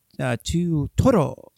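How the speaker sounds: put-on Japanese accent. Describing what he does at Japanese restaurants, doing a fake Japanese accent. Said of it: "he'll do like a little kind of fake Japanese accent".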